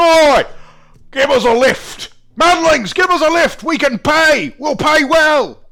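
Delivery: shouting as loud as possible. Figures on a small jetty call to a passing boat for a lift; bellowing at top of lungs. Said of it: "they're bellowing at the top of their lungs".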